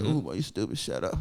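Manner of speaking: very soft, soothing moan. Retelling how a woman answered him, imitating a moaning voice. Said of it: "she said it in like a moaning voice".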